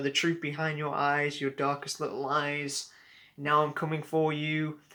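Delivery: plain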